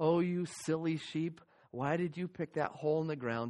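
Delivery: soothing voice. Retelling talk to a sheep being rubbed back to its feet, kind voice. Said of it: "I'd be talking in my kind voice".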